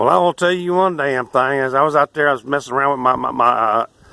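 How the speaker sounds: put-on Texas accent. Mocking someone who claims to be from texas, in a fake texas accent. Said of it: "somebody who claims they're from Texas and they sound like this".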